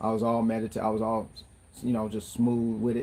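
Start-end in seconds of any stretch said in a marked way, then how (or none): none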